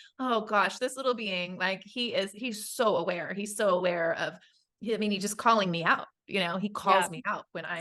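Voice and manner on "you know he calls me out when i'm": ordinary talk, nothing marked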